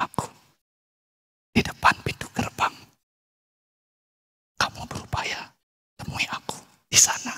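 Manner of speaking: hushed, very soft, breathy, barely voiced whisper. Acting out someone talking where it is crowded: whispered. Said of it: "rugi saya bisik-bisik".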